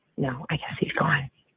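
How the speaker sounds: hushed, soft whispered words. Answering a 911 call about a man not breathing, whispering. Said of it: "does anyone else wonder why she whispered that?".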